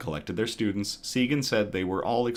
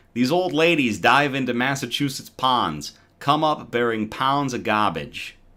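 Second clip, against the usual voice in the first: loud put-on Boston accent; 5 dB louder than usual. Reading an article headline aloud from Massachusetts: put-on Boston accent. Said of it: "I will use my Boston accent".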